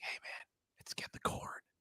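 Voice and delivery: hushed whisper. Showing how hunters talk in a deer stand: whispering. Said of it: "I think it's like whispering".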